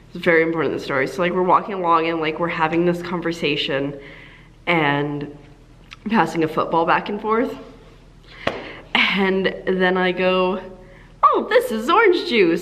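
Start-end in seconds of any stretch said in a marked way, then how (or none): 11.3-12.7 high, mock teasing, jokey tone. Speaker retelling a walk passing a football back and forth, retelling a joking line. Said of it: "like jokingly".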